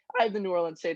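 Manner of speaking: voice cracking and breaking mid-phrase. Speaker giving his pick for a football game, voice cracking. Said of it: "voice crack".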